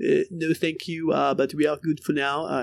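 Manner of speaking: haughty, snooty put-on French accent, dismissive. An ad narrator voices a manager turning recruiters down, in a snooty French accent. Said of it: "in a snooty French accent".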